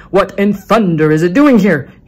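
hot-tempered bellow at full volume, loud and booming. A museum owner sees an empty cradle rocking gently; shouted. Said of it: "he shouted".

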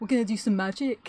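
put-on Birmingham accent. Doing an impression for the camera: Dynamo Birmingham accent. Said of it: "Do a Dynamo accent".

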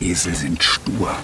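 hushed, whispered tone. In a conversation, one character confides to the other: whispering. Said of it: "(flüsternd:)".

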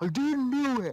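put-on very high, shrill, furious child's shout. Imitating an angry kid yelling into the mic: imitating an angry kid yelling. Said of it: "like you're an angry kid who, like, puts his mouth close to the mic and yells".

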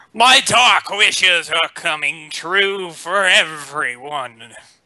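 put-on magic-lamp genie character voice. During a game, using foretelling, the player speaks in a genie voice. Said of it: "What the heck kind of voice was that?".

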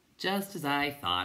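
smiling voice, high, slow and unhurried. Bastian replies to Atreyu, who wants to talk things over, with a smile. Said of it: "said Bastian with a smile".

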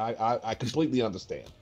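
normal talking voice

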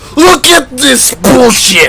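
high, slow, furious raging shout.

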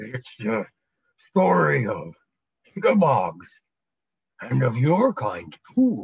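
slow, deep voice like a giant creature. Narrator reads the Ickabog answering a question, in its slow deep Ickabog voice. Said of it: "it said in its slow, deep voice".

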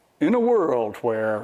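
dramatic, slow movie trailer announcer voice. Showing the kind of voice a set of predictions was written in: "in a world where" trailer voice. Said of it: "that voice of, like".

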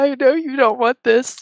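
tearful weeping, very high-pitched crying voice. Bathing an unwilling cat and consoling him in character: acted crying while talking. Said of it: "I'm, like, crying".

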